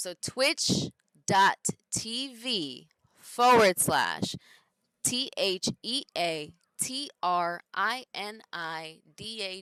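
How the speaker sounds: very loud, very slow, spelled out letter by letter. Spelling out a web address for viewers: saying it slowly. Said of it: "I'm gonna say it slowly".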